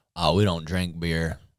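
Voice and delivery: put-on speaking in a Louisiana accent. Improvising a scene with a partner, speaking in a Louisiana accent. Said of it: "let's do a Louisiana accent".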